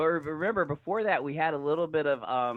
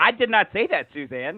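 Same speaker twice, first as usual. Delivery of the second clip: play-acted sincere, dead-serious, earnest, insistent tone; 5 semitones higher than usual. Retelling how Julia denied saying something: imitating a very serious denial. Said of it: "a very serious, like, she really didn't say it kind of way".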